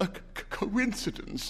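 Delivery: high, stuttering, faltering, stammered words. Narrator reads the old man answering the old woman, stammering. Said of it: "stammered the old man".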